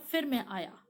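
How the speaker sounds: normal talking voice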